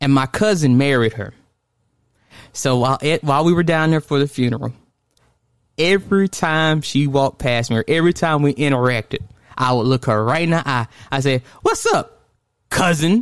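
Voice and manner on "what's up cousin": mock angry, high, swooping voice, as angry as possible. Retelling how the speaker greeted a cousin's wife at a funeral, mock-angry greeting. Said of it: "Just as angrily as I could possibly get it out".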